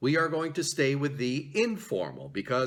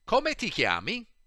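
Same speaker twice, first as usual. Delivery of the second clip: a notch quicker and pitched up; 6 semitones higher than usual. Repeating the Italian phrase once more for the listeners, a bit faster. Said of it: "we'll say it just a bit faster".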